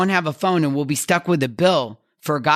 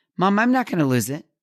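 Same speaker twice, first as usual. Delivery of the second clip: cool, calm, self-assured and confident tone; 3 semitones higher than usual. A mother retells her son's answer about losing his phone: imitating a son's calm confidence. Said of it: "looked over at me calmly and confidently".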